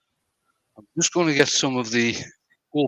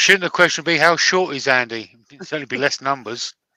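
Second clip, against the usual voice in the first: plain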